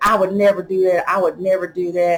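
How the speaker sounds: normal talking voice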